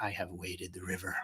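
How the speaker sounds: very soft, quiet, threatening voice. Reading a chat message aloud: Liam Neeson "I'll come and get you" voice. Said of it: "That was a Liam Neeson, uh, "I'll come and get you" voice".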